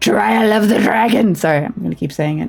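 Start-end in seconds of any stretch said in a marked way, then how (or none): 0.0-1.3 throat-straining, dramatic, loud shout. Announcing a game trial title, then saying it hurts: throat-straining dramatic shout. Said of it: "That hurts my throat".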